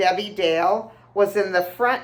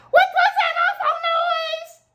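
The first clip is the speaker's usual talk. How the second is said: acted, very high, thrilled, alarmed shout. Retelling a family story about a loud bang, imitating Judy's high, excited yell. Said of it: "in her high-pitched, excited voice like this".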